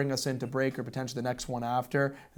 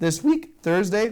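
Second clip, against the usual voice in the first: voice breaking on the words, higher and louder; 7 semitones higher, 7 dB louder than usual. Previewing the team's road games this week, the speaker's voice cracks. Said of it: "as my voice cracked there".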